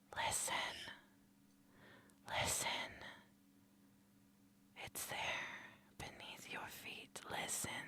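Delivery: very quiet, eerie whisper, barely voiced. Voicing a madness network that speaks to the player: whispering voices. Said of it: "the Malkavian Madness Network whispering to you".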